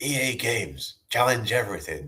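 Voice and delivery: put-on whispered child voice. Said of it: "it's like a kid whisper voice saying".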